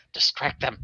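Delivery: soft, hushed whisper, said in passing. Passing a character in a doorway and telling him quietly: whispering. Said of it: "whisper to him".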